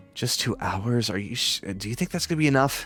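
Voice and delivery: soft, hushed half-whispered aside. Voicing a character who half-whispers secretly to a companion: half-whispering. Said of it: "she seems to be whispering to Onyx".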